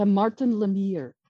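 imitated French Canadian male accent. Quoting a man you had never met introducing himself, French Canadian accent. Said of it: "he's got his French French Canadian accent".

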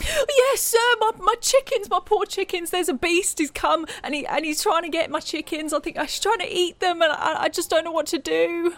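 distressed, frenzied pleading. A farmer pleads with a stranger for help; panicked, frantic farmer. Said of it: "And he looks really distressed. He looks really panicked. He's kind of flitting from person to person, like grabbing people in a kind of frenzy".

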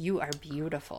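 unsettling, creepy, adoring tone. Retelling how one character admires another in a really creepy way: imitating creepy admiration. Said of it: "admiring Taln in a really creepy way".

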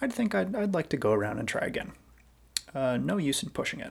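put-on very calm, methodical voice. Retelling what he said while coming in to land: imitating a calm, methodical voice. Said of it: "in a very calm and methodical kind of voice".

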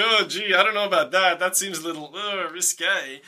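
ordinary talk

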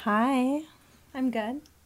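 really seductive, sultry voice. Answering the presenter's greeting and question how you're doing: really seductive tone. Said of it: "That was really seductive".

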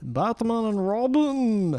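drawn-out TV announcer voice. Signing off the show and thanking everyone for listening, in an SNL announcer voice. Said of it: "you kind of said that like the announcer from SNL".

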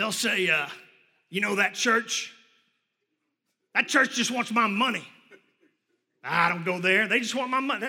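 put-on grumpy, complaining voice. Speaker imitates people who complain about the church, in a put-on grumpy voice. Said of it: "They usually have a grumpy voice".

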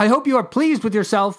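fast, high-pitched shout. Looking far down at Chevron screaming with laughter, the narrator calls out: shouted. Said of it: "I shouted".

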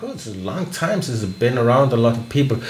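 plain

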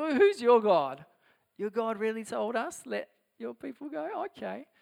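derisive scoff. Retelling how Pharaoh answers Moses: mocking as Pharaoh. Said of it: "He mocks him".

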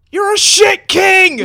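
very loud, very high shout. Playing a character who yells down into the pit: yelling into the pit. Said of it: "I yell into the pit".

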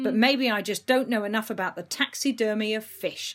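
ordinary talk

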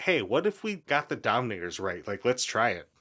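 ordinary talk, nothing marked

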